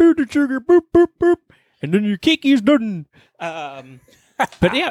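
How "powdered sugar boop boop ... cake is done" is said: very high, squeaky puppet chef voice with patter. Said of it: "starting to turn into Swedish Chef".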